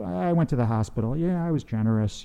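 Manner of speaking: breezy, unearnest throwaway delivery. Showing how not to say it, as opposed to earnestly: lacking earnestness. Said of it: "Not like".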